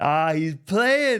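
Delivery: loud, high-pitched, slow outburst.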